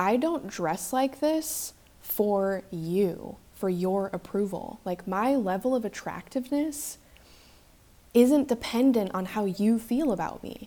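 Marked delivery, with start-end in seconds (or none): none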